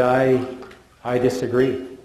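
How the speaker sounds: put-on East European accent. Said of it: "In his East European accent".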